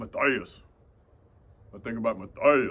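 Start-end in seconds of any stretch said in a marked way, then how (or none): 2.2-2.7 voice dropped lower on one word. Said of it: "I drop my voice when I say that name".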